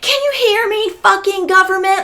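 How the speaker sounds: all-out yelling, very high and shrill. Retelling coming home upset over an unexpected bill, retelling own yelling at the electronics. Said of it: "yelling at the electronics in my house".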